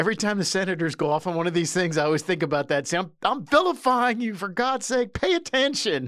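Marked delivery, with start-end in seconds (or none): 3.0-6.1 mock holler, slow, pitched up, scolding tone. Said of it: "Peter O'Toole hollers at her".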